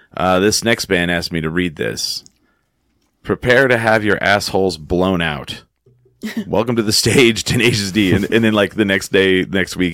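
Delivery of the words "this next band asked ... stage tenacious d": deadpan, very straight, flat delivery. Retelling the open mic host's introduction of the band: imitating Paul F. Tompkins as the deadpan host. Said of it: "he's, like, uh, very straight, and he'll come up there and he'll go".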